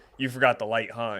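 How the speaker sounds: ordinary delivery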